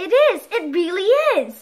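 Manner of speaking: gleeful, high, loud excited cry bursting out. A man answers his wife as they gasp at a glittering object, crying out. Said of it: "cried the man".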